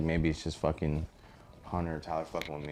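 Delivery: ordinary talk, nothing marked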